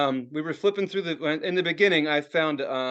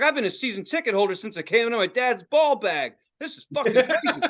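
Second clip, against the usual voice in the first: pitched-up, excited ranting tirade; 7 semitones higher than usual. Retelling a store owner going off about game start times: imitating someone ranting. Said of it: "he's just going off".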